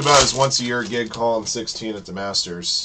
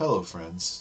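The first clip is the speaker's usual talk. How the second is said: put-on hushed, murmured golf broadcast commentator voice; 2 semitones lower, 9 dB quieter than usual. Opening Fire Hand Cards with breaks like at the Masters, Jim Nantz impression. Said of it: "if I just completely changed my tone and started doing breaks like Jim Nantz at the Masters".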